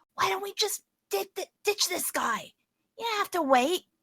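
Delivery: hushed, high-pitched, coaxing tone. Describing what she'll say to him while playing her role: hushed voice. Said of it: "she'll say in a hushed voice".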